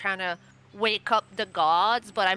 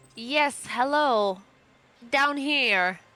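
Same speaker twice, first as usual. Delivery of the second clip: slightly booming voice; 4 semitones higher than usual. A game character who speaks Sylvan greets someone from below, in a slightly booming voice. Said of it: "my voice like boom a little".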